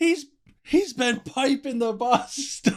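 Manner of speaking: shrill, very high screaming shriek. Retelling a movie scene where a character screams news to everyone: imitating a scream. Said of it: "just screams it to everybody in the building".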